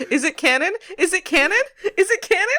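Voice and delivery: very high, climbing pitch. Retelling a friend's text, repeating a question in increasingly high pitches. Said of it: "repeating,'Is it canon?' to myself in increasingly high pitches".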